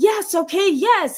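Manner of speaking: very high, angry, acted-out scream. Retelling a young man in therapy screaming an admission: imitating someone screaming. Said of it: "And he's screaming at me".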